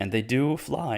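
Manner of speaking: voice cracks, breaking on a word. Recapping a story's plot for listeners, voice cracking. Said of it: "nice little voice crack there".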